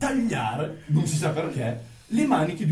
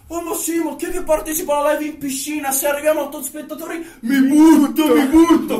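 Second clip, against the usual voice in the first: loud, high hollering yell; 9 semitones higher, 8 dB louder than usual. Retelling what a woman yelled in the middle of the residence, imitating her yelling. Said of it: "che urlava in mezzo al residence".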